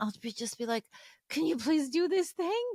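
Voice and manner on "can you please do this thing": short-fused, edgy, impatient, pitched up. Describing how they ask her to do things when tired, acting out being impatient. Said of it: "a bit more edgy, a bit more impatient".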